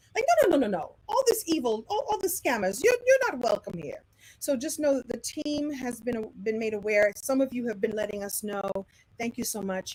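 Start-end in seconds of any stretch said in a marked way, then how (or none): 0.5-4.1 high and swooping voice. Banishing scammers and evil: Glinda the Good Witch voice. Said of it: "I'm doing my little Glinda the Good Witch".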